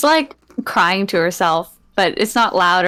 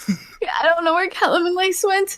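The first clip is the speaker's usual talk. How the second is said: put-on crying voice, much higher pitch; 11 semitones higher than usual. Retelling a story and acting out Heidi's words, imitating Heidi crying. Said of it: "why are you crying like that?".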